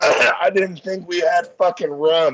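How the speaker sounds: very slow, loud, drawn-out coughing and choking. Voicing a character burned by strong rum: coughing while speaking. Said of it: "coughing my fucking brains out from the burn".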